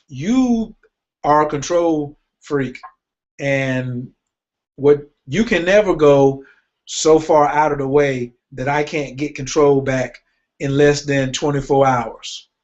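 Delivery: ordinary talk, nothing marked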